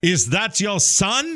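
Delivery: put-on German accent. Retelling what a man asked on seeing his buddy beside him, German accent. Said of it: "with like a German accent".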